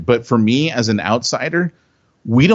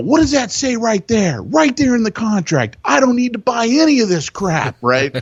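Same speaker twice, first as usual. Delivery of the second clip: put-on very high, climbing, livid yelling; 11 semitones higher than usual. Retelling confronting a guy over a contract, retelling a yell. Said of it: "And I'm like yelling at him".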